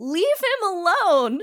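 shrill, very high, loud shriek. Retelling a movie scene where a character defends someone: imitating a scream. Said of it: "she screams".

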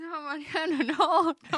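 pained, suffering pleading, very slow and drawn out. Speaking to mariano in the middle of a story, sounding like you're suffering. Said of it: "Te sufriendo acá, estoy".

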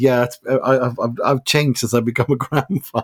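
heavily sarcastic, mocking delivery. Retelling a coach's press-conference answer: imitating a sarcastic reply. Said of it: "he's so sarcastic".

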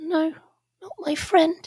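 very high, slow mutter under the breath. A trembling character sees a friend not get up; muttered under breath. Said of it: "they kind of mutter under their breath".

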